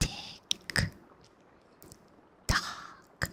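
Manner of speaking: exaggerated mouth sounds. Repeating a word close to the mic: extra mouthy. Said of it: "I try to make it extra mouthy".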